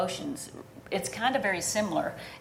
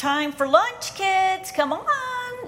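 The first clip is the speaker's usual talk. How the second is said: very high, forced fakey tone masking anger; 12 semitones higher, 6 dB louder than usual. A mother recalls calling her kids to lunch, retelling her fakey voice hiding anger. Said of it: "why are you talking in a fakey voice?".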